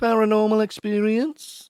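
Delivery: experience said with a rising, lifted tune. Reading a phrase that ends in a question mark: rise at end of experience. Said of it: "See if you can get there's a question mark there".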